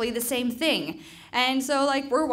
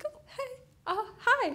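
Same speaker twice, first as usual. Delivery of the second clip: play-acted shaky, very high, faltering delivery; 13 semitones higher, 4 dB quieter than usual. Retelling waking up frightened and greeting him: retelling own shaky greeting. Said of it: "all super shaky".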